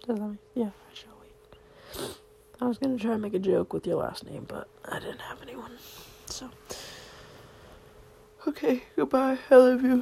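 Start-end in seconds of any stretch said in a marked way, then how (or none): 6.3-10.0 words stretched out by a yawn. Signing off at the end of a recording, saying goodbye through a yawn. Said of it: "Sorry, I yawned".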